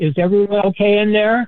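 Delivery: wary, suspicious tone. Retelling a man calling into the restroom from outside, imitating a suspicious male voice. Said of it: "With his real suspicious voice".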